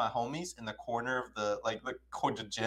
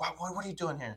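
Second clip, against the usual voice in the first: put-on angry girl voice, higher pitch; 6 semitones higher, 3 dB quieter than usual. Retelling how the girl reacted when approached: imitating an angry girl. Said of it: "she's pissed".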